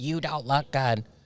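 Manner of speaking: mocking, put-on whiny nasal voice. Mocking an annoying person, the speaker imitates him in a whiny nasally voice. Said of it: "His whiny ass little fucking nasally voice".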